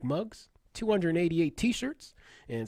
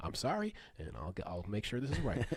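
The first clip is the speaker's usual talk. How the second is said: very low, calm, sincere voice, soft and soothing; 8 semitones lower, 9 dB quieter than usual. Picturing an apology, speaker does their best calm, sincere Chris Hansen impression. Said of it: "It's my best Chris Hansen".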